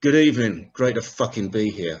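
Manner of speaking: put-on dry, deadpan, sarcastic delivery. Telling how a performer opened his last ever gig, imitating a sarcastic, dry delivery. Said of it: "that very sarcastic, dry voice".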